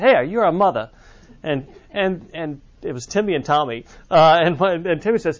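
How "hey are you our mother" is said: put-on New Orleans local's accent. Retelling twins' story at a service, imitating a New Orleans accent. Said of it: "New Orleans accent".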